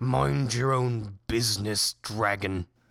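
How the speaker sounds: gruff, orc-like monster voice. Narrating a game, the orc Brandy looks over and speaks to the dragon; Brandy's gruff orc voice. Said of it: "in a gruff voice with teeth exposed".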